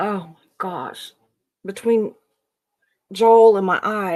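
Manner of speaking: loud, choked-up, tearful crying with breaking emotion. Recalling the cult's harm and speaking of Joel, the speaker is crying. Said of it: "I'm crying here".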